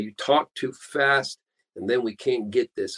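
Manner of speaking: ordinary talk, nothing marked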